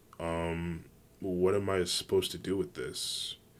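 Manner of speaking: ordinary delivery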